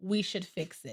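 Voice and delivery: composed. Showing a partner how to raise a problem while rubbing their back: calm. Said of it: "I'm gonna be calm when I say it".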